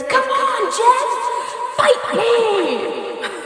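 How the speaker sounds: very high, every word stretched out, taunting wrestler voice. Retelling a character challenging Jeff to a fight: WWE Macho Man voice. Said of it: "W W E Macho Man".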